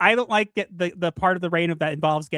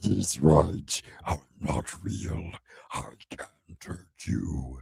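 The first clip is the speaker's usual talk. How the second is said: whispered, hushed, breathy demon voice; 13 semitones lower, 8 dB quieter than usual. Repeating the line the other just said, as she suggested: demon voice. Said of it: "you should say it with your demon voice".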